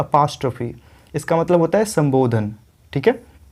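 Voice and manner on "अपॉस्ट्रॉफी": apostrophe, pa stressed, short a. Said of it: "apostrophe नहीं".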